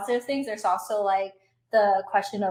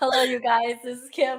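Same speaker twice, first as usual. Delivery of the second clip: exaggerated, mock tired and hoarse voice; 2 semitones higher than usual. Joking about sounding worn out after travel: mock tired hoarse voice. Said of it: "I sound like".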